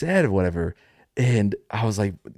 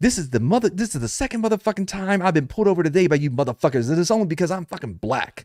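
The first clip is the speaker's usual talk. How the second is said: play-acted furious rant, high-pitched; 5 semitones higher than usual. Retelling the stopped driver's complaint about being pulled over: imitating an angry driver. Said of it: "And she goes".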